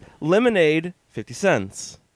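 ordinary talk

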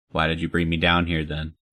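usual speaking voice

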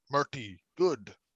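simple, primitive caveman voice. Imagining what another person will say, in a caveman voice. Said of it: "I don't know why I gave a caveman voice like that".

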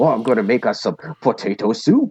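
put-on Irish accent. Recalling an actor in an episode, imitating the Irish accent he was doing. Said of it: "he's doing the Irish accent in that".

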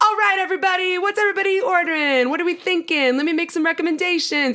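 very high, bubbly, life-of-the-party chatter. Retelling a restaurant visit, imitating the new server as the life of the party. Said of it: "all of a sudden, the life of the party".

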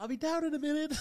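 put-on very high young girl voice. Retelling a man calling down from upstairs to a visitor, in a 14-year-old girl's voice. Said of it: "doing a 14-year-old girl's voice".

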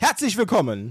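overly enthusiastic, booming, way too loud, high voice. Opening with a welcome greeting, way too loud greeting. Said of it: "das war wirklich viel zu laut".

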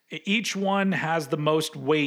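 ordinary delivery

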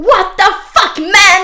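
very high, shrill, loud yelled scream. Retelling an embarrassing moment in front of others, reenacting the scream. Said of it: "så jag bara skriker".

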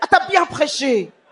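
put-on fierce, fighting, warlike tone. Interpreting a wife's words to her husband after preaching: imitating a warlike tone. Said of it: "elle a dit avec un ton comme ça, un peu de guerrière".

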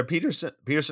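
voice breaking in pitch. Repeating a name in conversation, voice cracking. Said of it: "my voice cracked there".

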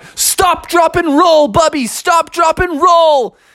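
shrill character yell, very high-pitched. Telling a made-up story, voicing the aardvark: shouting as the aardvark. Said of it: "the Aardvark shouted out".

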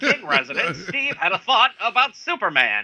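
high 1940s radio announcer voice. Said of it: "my nineteen forties radio voice".

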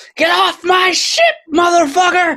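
furious, shrill, very high-pitched battle yell. The ship's captain charges a Sahagwin from behind with her spear, yelling in anger. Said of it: "she's yelling out in anger".

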